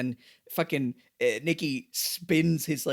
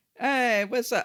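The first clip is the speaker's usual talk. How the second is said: charming, strutting, pitched-up swagger; 8 semitones higher than usual. Imitating an actor's performance in a show: imitating a swaggering delivery. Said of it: "the way he's doing his, like, swagger".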